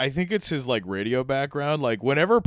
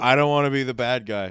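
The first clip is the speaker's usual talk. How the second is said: ordinary delivery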